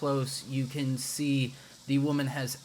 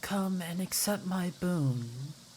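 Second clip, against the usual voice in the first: soft gentle whisper, higher; 5 semitones higher than usual. A storyteller voices a woman's form reaching toward the listener, in a soft whisper. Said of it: "a soft voice ... whispers".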